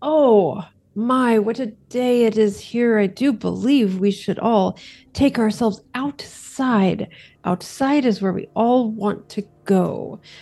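voice lifted up slightly. Voicing a vampire urging everyone to go outside: voice lifted up a bit. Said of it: "she just sort of lifts her voice up a bit".

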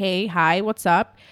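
put-on, very soft, quiet male voice. Retelling how a guy answered a call, imitating Max's very soft tone. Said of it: "In a very soft tone".

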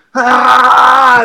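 loud, high-pitched caveman yell.

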